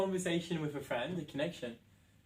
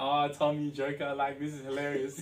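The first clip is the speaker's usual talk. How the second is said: mock laughter while talking. Retelling own reply to a caller who was waiting outside: retelling own past laughing. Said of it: "I'm laughing, like".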